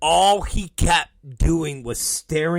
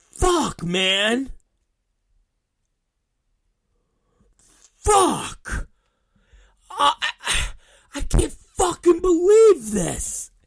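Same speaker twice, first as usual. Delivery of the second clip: put-on anguished voice, pitched much higher; 12 semitones higher than usual. Retelling how Enzo reacted after Joe apologized, imitating Enzo in pain. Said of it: "Enzo has this look of pain".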